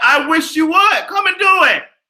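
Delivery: high, loud, defiant shout. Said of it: "I said".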